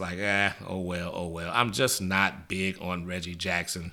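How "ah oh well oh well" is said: unenthusiastic, indifferent oh-well tone. Showing how his voice sounds about a player: unenthusiastic, oh-well tone. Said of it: "in my voice, if it sounds like".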